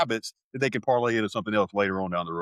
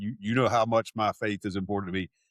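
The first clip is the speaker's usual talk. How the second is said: plain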